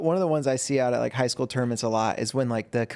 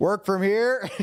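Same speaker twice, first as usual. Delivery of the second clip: mock yelling, much higher; 7 semitones higher than usual. Telling a story about a father in the crowd at a jiu-jitsu match: retelling a yell from the crowd. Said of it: "Spey is just in the crowd just yelling".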